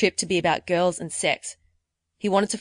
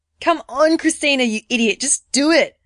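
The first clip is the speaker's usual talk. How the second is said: high, loud, scolding yell; 7 semitones higher, 5 dB louder than usual. Retelling urging herself on inside her head; mock screaming at herself. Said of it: "i was just screaming at myself inside my head".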